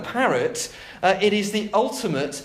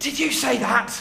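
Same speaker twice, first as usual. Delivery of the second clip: hissed, grating, rough and creaky voice; 3 semitones higher than usual. Reading a story aloud, a character confronts the parrot: hissing. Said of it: "He hissed at the parrot".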